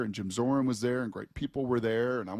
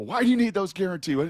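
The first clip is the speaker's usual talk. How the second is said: insistent, needling, pressing tone with raised voice; 8 semitones higher, 6 dB louder than usual. Retelling a contract phone call, imitating Mike getting on him. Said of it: "he's just kind of getting on me a little bit".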